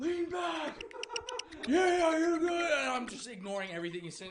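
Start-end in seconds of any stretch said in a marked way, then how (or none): 0.0-2.5 very high, loud, rodeo-style cheering holler. Retelling a bull ride, imitating a cowboy in front: imitating someone shouting. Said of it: "shouting at me like we're at a P B R event".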